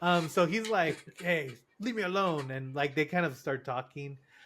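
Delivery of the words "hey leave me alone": put-on cranky old man voice, higher. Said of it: "a familiar Logan Roy, Roy-esque voice".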